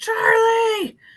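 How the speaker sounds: high, loud desperate yell.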